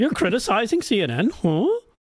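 goofy high news anchor voice. Mocking how he reacts when someone criticizes CNN: Brian Stelter impression. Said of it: "with his big dumb head tilting like a dog when he hears something like".

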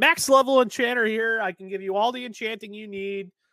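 shrill, very high, loud vendor's hawking yell. Retelling sitting on the bridge calling out to players: retelling own yelling. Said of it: "and I'm yelling".

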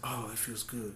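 low, very soft sensual moan. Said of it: "you're just like".

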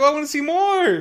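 high, loud eager gush. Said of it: "God, I was like".

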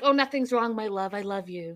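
mocking, over-the-top, exaggerated affectionate lovey tone. Retelling how a couple talks before a fight: mocking over-the-top lovey talk. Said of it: "You guys sound ri-, ridiculous".

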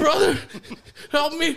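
very high-pitched, loud, sobbing, crying scream. Retelling banging on the door to a younger brother's screams, imitating Tony screaming, crying. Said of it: "he's just screaming and crying".

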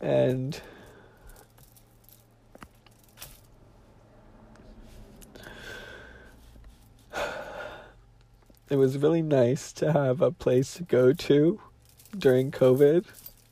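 crying hard, tearful sobbing while talking. Talking about coworkers who felt like family: crying hard while talking. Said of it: "It's so annoying that I'm crying this hard".

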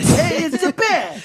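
very high-pitched put-on Brooklyn street accent. Friends redoing the bat line after switching from Boston, in a Brooklyn accent.

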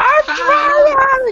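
shrill, very high, very loud scream, "trying" stretched. Playing a character in a tabletop party mid-death battle, screaming in character. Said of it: "I'm literally just screaming".

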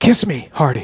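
put-on whispered voice. Retelling a dying admiral's words to his flag captain: imitating a whisper. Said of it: "whispered to his flag captain".

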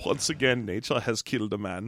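low, soft, hushed bad German accent. Imagining Werner Herzog narrating the end credits, in the worst German accent. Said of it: "have the worst German accent".

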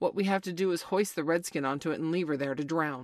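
ordinary delivery

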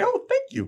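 put-on, bright, bubbly, chipper voice, pitched way up. Retelling a character entering a vampire lair: imitating a chipper greeting. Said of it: "she comes in all chipper".

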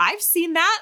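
high, amazed exclamation. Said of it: "Like, he'll do something and I'm like".

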